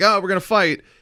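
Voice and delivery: high, loud yelling. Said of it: "someone would yell at you".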